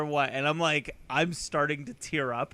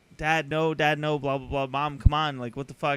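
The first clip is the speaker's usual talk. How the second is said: plain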